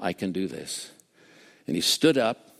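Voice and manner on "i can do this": soft, hushed whisper, very close. Retelling what a weeping man whispered in someone's ear: imitating a whisper. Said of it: "whispered in his ear".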